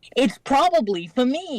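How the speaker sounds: very high-pitched cartoon rabbit voice. Showing a line from an audition as Bugs Bunny. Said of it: "I did Bugs Bunny".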